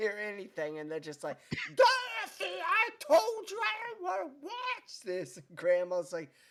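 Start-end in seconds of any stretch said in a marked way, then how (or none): 1.7-5.4 put-on very high, drawn-out, squabbling screech. Speaker recounts great-grandma and grandma arguing over the loud TV, imitating someone screaming. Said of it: "they're like screaming at each other".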